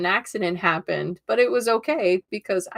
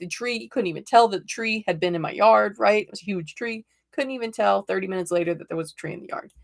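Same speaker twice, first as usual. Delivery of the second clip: normal talking voice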